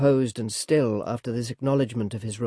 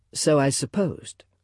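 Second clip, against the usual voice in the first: ordinary delivery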